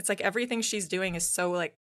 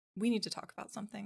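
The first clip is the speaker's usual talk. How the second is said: put-on quietly angry voice, calm, quieter; 3 semitones higher, 6 dB quieter than usual. Retelling how a mom walks in when mad: imitating a calm but mad mom. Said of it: "you know that she's really calm".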